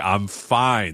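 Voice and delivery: mock annoyed, plainly not-fine tone. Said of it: "you're like".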